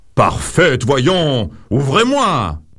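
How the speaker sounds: shouting in a big, royal voice. A king shouts through his daughter's locked door, shouting in a big voice. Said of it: "Le roi crie de sa grosse voix".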